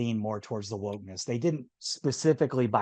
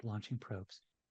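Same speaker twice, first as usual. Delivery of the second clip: very quiet, muted, hushed delivery; 2 semitones lower, 14 dB quieter than usual. Retelling how the helmsman answered, imitating someone speaking quietly. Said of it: "real quiet".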